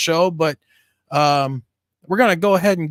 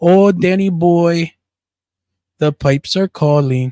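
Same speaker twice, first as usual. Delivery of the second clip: loud, put-on Irish brogue; 5 dB louder than usual. Joking about a stepmother who was highly irish: put-on irish accent. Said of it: "My Irish accent".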